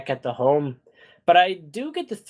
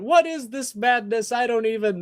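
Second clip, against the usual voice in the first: mock, pitched-up, hollering yell; 9 semitones higher than usual. Describing the audience's reaction to what happens on screen; imitating them yelling at the screen. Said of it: "the audience yelling at the screen going".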